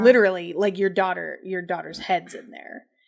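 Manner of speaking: ordinary talk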